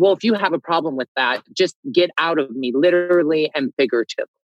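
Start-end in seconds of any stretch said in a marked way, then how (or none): none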